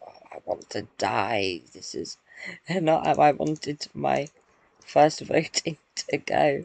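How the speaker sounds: muttering to oneself. Retelling own reaction to applause at first vote: imitating a mutter to oneself. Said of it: "I just muttered to myself".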